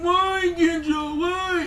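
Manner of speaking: high, exaggerated mock crying whine.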